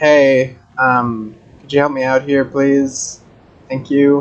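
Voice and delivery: very calm, unbothered, courteous voice. Voicing a character yelling down for help: very calm in-character call. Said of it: "Very calm".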